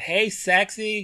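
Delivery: shrill, very high, full-volume shout. Retelling how a girl behind in the hall called out: imitating someone shouting. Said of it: "I heard somebody behind me shout".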